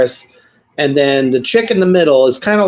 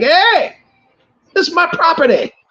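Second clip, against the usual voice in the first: very high, cartoonish old-man voice; 13 semitones higher than usual. Retelling a film scene, imitating the old man from Beavis and Butthead. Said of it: "it's like the old, the old man on, uh, uh, fucking Beavis and Butthead".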